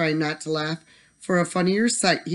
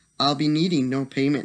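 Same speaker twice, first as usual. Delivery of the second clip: ordinary delivery, nothing marked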